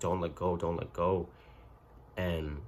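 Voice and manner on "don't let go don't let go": plain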